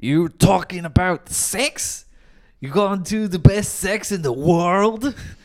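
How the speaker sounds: loud pro-wrestler bellow, wrestling promo style. Describing a movie character who shouts at everyone, talking like Hulk Hogan. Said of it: "And he talks like Hulk Hogan".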